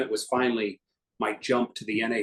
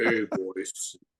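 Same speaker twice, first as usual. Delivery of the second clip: put-on radio announcer voice; 2 semitones lower than usual. Retelling how an announcer used to greet him, imitating Bob Wilson. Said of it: "I'd see him and he'd say".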